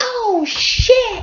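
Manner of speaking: put-on squeaky, very high little-kid voice. Seeing the keys are in there, exclaiming: little kid voice. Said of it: "in my little kid voice".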